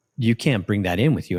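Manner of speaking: normal talking voice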